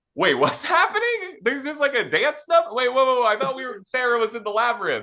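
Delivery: very high, startled, bewildered, caught-off-guard confusion. Acting out a viewer caught off guard by a dance number: imitating a caught-off-guard viewer. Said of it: "you're caught off guard and you're like".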